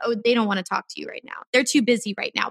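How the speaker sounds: fast, rattled-off, doubting little voice.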